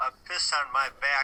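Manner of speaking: put-on drunk voice. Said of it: "Jeffrey Epstein's dying words".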